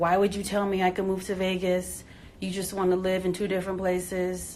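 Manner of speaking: mad, annoyed, accusing outburst. Quoting her partner when he got mad at her, retelling an angry outburst. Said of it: "he gets mad and he's like".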